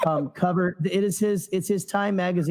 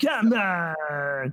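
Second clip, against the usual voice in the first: very disappointed outburst, "on" drawn out. Guessing what a toy will say, imitating Watto: disappointed Watto voice. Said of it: "him being very disappointed, going".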